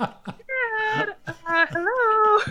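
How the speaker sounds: frightened squeak, very high-pitched. Retelling being in the car, using mom's afraid tone: mock-scared high-pitched tone. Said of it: "That was me in the car".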